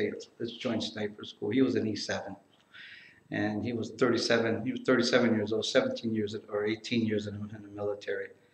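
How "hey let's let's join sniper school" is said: soft, hushed whisper. Retelling what an older soldier said to him: imitating Gramps whispering. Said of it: "he whispers to me, he throws out a whisper".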